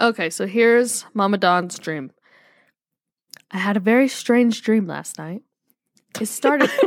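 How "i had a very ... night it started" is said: audiobook narrator reading tone. Reading out a listener's dream message aloud: audiobook narrator voice. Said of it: "I love the tone of your voice".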